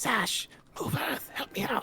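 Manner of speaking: very high, hushed, whispering voice. Voicing a character who asks a companion for help: whispering. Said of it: "then he also whispers".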